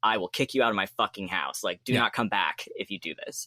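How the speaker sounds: angry, aggressive, threatening fatherly voice. Acting out the father in the movie threatening his son: imitating an aggressive father. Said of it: "more, uh, aggressive about it".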